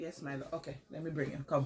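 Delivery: very soft, gentle murmur.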